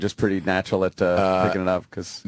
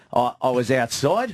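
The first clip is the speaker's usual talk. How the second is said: mock Australian upward inflection, higher-pitched; 5 semitones higher than usual. Imitating how Australians talk, going up at the end. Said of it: "how they kinda go up at the end".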